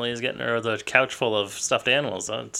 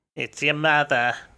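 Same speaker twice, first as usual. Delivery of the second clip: put-on motherly voice; 4 semitones higher, 4 dB louder than usual. Reading the mother's subtitles aloud: imitating the mother's voice. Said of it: "Your voice was killing me".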